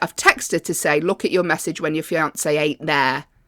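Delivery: ordinary delivery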